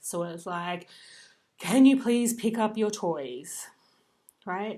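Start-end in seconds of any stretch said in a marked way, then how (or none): 1.6-3.7 very loud, frustrated, fed-up tone. Showing how a request to pick up toys sounds: frustrated tone. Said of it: "the tone of voice is frustrated".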